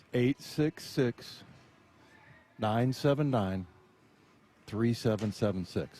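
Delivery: slow, careful, unhurried reading. Reading a phone number aloud and checking it is slow enough: reading slowly. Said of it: "Am I saying it slow enough?".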